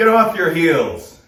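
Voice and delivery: loud yelling out.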